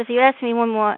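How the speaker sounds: usual speaking voice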